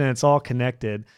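plain

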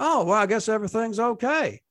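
high, best-effort put-on Texas accent. Describing a radio listener during bad weather, in an attempted texas accent. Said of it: "That's the best Texas accent I can muster".

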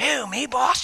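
keen, eager henchman voice. Retelling a story, the speaker voices an underling answering his boss, voicing the underling. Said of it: "And he says".

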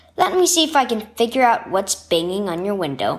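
ordinary delivery

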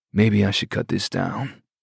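husky-voiced. A man tasting strong espresso from the family's espresso maker, husky voice. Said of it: "he said in a husky voice".

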